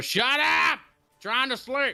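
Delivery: very high, drawn-out, cranky annoyed yell. Voicing someone woken at night, shouting at a yelling character: annoyed shout from a sleeper. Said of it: "you hear somebody just go".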